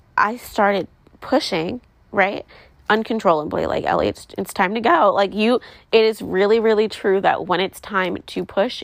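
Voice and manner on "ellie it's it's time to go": plain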